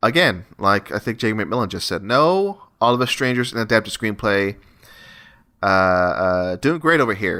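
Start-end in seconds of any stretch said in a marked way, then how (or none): none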